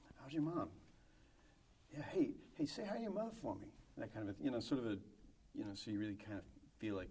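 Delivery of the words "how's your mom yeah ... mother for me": pitched-up, fake-friendly tone with audible menace. Showing how to deliver the movie line: Mark Wahlberg line with malice. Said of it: "the questionable intent of malice".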